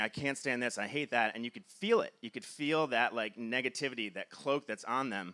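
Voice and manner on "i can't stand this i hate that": usual speaking voice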